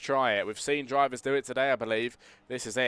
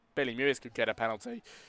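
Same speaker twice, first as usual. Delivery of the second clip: cracking, breaking voice; 4 dB quieter than usual. Commentating on possible race penalties, voice cracking. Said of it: "Voice crack".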